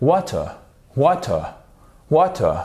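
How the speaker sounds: water in British English accent, distinct T. Demonstrating how to pronounce a word for French speakers: British English accent. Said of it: "c'est même du British English".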